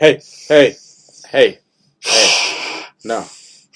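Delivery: loud, very slow, drawn-out cat voice. Retelling how the cat reacts to drinking: voicing the cat. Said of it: "he's like".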